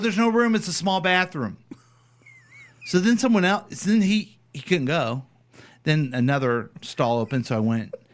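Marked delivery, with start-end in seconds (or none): 0.0-1.6 put-on yell, pitched higher. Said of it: "yelling at the guy".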